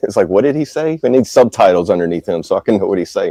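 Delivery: normal talking voice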